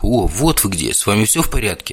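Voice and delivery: plain reading voice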